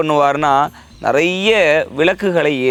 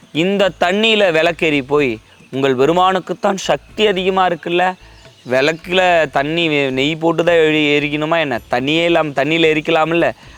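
plain

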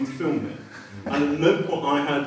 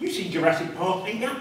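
put-on chatty, high-pitched Essex accent; 6 semitones higher than usual. Quoting what a producer said to you, imitating Sarah Mole's Essex accent. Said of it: "She talks like that".

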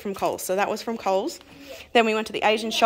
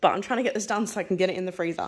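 talking really fast, rushed. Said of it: "I'm probably talking really fast".

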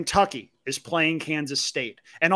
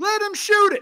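mock shriek at a very high pitch; 4 dB louder than usual. Reenacting a sportsbook bettor screaming for the player: imitating a guy screaming. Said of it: "the guy that was screaming".

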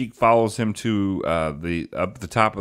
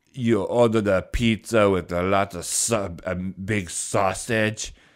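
deliberate fake Austrian accent. Retelling a line from a video she appeared in: imitating an Austrian accent. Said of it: "she has an Aust-, Austrian accent".

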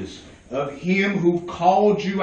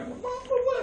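screaming at raised pitch; 9 dB quieter than usual. Retelling a reaction to a pastor's request: imitating own inner scream. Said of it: "I was screaming like".

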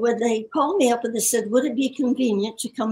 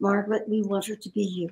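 hushed, soft, quiet voice; 2 semitones lower, 4 dB quieter than usual. Speaker recalling the answer mr. davis gave her, retelling a quiet remark. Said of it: "I said very quietly".

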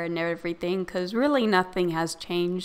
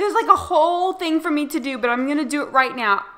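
stunned, thrilled, high and rushed gush; 9 semitones higher, 7 dB louder than usual. Just invited to be a player moderator, telling everyone the news, shocked and excited. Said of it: "I'm so shocked!".

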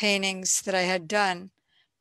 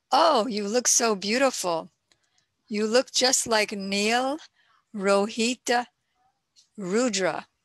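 sarcastic delivery. Retelling what she said to Krishna: retelling a sarcastic remark. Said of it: "So she sarcastically said".

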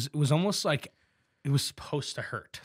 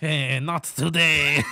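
put-on French-sounding voice and accent; 4 dB louder than usual. Wondering aloud how people might turn someone away: French accent. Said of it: "they sound like the French".

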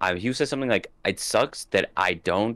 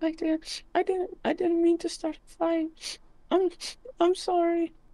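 high-pitched put-on character voice. Playing a character in a roleplay scene, high-pitched voice. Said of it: "I don't like doing that high pitch voice".

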